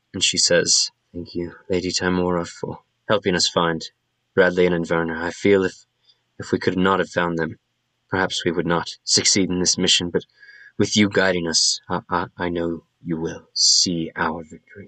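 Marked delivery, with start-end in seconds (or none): 1.1-14.9 whispered, soft delivery. Voicing a character praying while riding alongside another: whispering a prayer. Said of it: "She's just whispering to herself".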